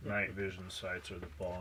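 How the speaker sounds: low, soft, dead monotone.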